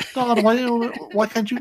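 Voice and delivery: put-on high, whiny, disappointed kid voice.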